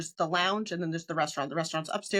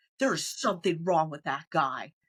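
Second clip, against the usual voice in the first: mock dead-serious, stern, firm, as if to oneself. Retelling what you told your girlfriend about a strange guy, retelling speaking very sternly. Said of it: "I just like spoke to her very sternly".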